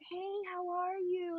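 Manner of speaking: very soft and slow. Retelling how her girlfriends answered an old man's calls, imitating talking very low. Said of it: "they would even talk like very low".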